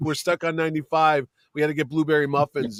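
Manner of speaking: ordinary delivery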